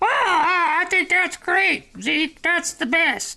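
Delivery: very high, very slow silly put-on little voice. Acting out the silent partner's podcast answer in a made-up little voice. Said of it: "make up a little voice".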